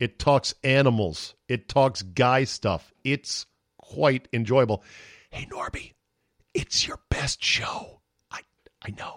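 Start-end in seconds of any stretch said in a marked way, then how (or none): 5.3-9.2 hushed, quiet whisper. Addressing Norby directly in an aside: whispering. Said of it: "I'm whispering".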